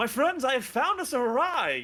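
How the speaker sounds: very high, loud, swooping, drawn-out proclamation. Voicing Cassius as he jumps up, greeting the group: Cassius voice. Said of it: "you see Cassius jump up and go".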